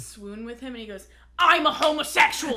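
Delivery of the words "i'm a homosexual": very loud, high-pitched yelling. Retelling how a friend yelled at them in a store: imitating David Hutchko yelling. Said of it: "he's yelling at me".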